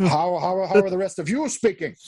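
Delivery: put-on Scottish accent. Retelling how Sean Connery speaks in the film: Sean Connery impression. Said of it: "Sean Connery walks in, and he's like".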